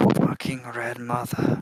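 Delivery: grumbled, muttered aside under the breath. Muttering in character after a long pause: muttered under breath. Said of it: "under my breath".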